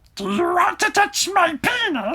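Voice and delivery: very high, drawn-out character voice. Teasing the other speaker after planning to use it: Gollum voice. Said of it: "bust out the Gollum voice today".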